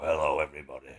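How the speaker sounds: put-on deep manly voice. Joking about greeting everybody every morning: put-on deep manly voice. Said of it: "I talk in a deep voice".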